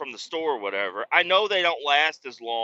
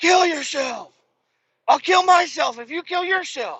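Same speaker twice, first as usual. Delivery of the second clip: mock yelling kid voice, loud and very high; 14 semitones higher, 5 dB louder than usual. Speaker retells what he heard him shout over a video game, imitating loud yelling. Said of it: "because you're loud as hell".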